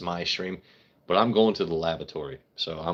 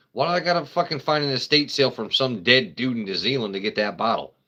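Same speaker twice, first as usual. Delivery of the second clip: worked-up, raised, high-pitched yelling; 5 semitones higher, 3 dB louder than usual. Speaker rants about having to hunt down a sherry bottle, yelling. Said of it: "I'm yelling".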